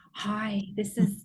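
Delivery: put-on, very provocative, come-hither tone. Recalling a lady in the room who tried anything, imitating her provocative voice. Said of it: "She put on like this very provocative voice".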